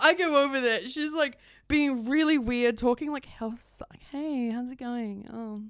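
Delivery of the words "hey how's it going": put-on soft odd voice, quieter and slower. Describing a man's girlfriend greeting the speaker, imitating a soft put-on voice. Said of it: "talking really soft. It's like really weird put on voice".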